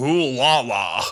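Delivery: put-on Who La La pronounced with an American accent. Retelling how American podcast hosts said the show's name: imitating an American accent. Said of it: "but they were American".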